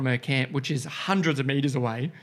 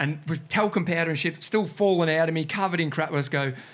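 ordinary talk

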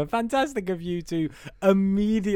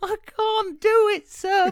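mock pleading victorian boy voice, higher pitch; 14 semitones higher than usual. Retelling a message from a co-host as a Victorian boy, imitating a Victorian boy pleading. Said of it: "a little Victorian Al message me".

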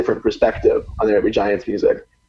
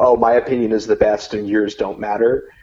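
put-on mocking tone. Describing how fans post opinions in the group: imitating a mocking tone. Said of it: "in this, like, mocking tone".

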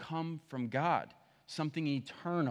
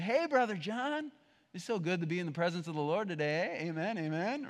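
fake, beaming, put-on cheerful voice. Showing how churchgoers fake happiness: imitating fake happiness. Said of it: "We're really good at faking this".

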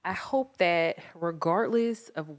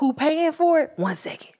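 very high, shrill, loud mocking caricature voice; 10 semitones higher, 8 dB louder than usual. Retelling how the mayor dodges questions: imitating the mayor. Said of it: "He be like".

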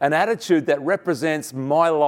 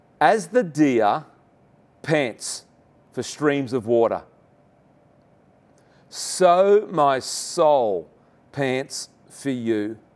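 slow, deliberate, unhurried reading. A preacher reading scripture aloud to listeners; reading a bit slower. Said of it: "I want to read this a little bit slower".

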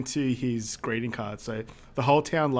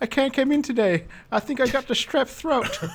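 very high, put-on, fake sick, poorly voice; 12 semitones higher, 4 dB louder than usual. Retelling how Deeds asks Murph to redo it, imitating Murph's fake sick voice. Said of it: "do that sick voice again".

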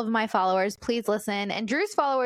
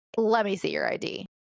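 sassy, attitude-laden tone, acted out. Retelling how the store clerk asked for ID: imitating the clerk with an attitude. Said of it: "with, like, an attitude".

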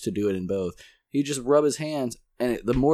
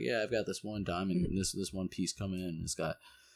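put-on flat emotionless voice, lower and quieter; 4 semitones lower, 12 dB quieter than usual. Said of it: "it was no emotion behind that excitement".

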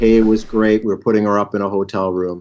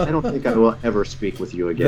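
plain

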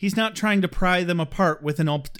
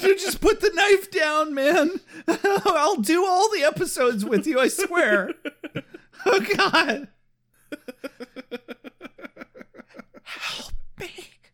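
very high voice, words squeezed through laughter; 11 semitones higher than usual. Begging the other speaker to put the knife down, laughing while talking. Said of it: "I sound like I'm laughing".

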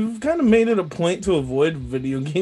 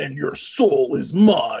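low, deep voice, dropped right down; 4 semitones lower than usual. Right after the podcast host's introduction, in a Shang Tsung voice. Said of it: "What if I talk like that".

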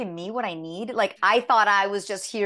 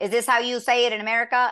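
earnestly attempted put-on American accent; 3 semitones higher than usual. Retelling a co-actor's question on set: imitating an american accent. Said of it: "he was doing an American accent".

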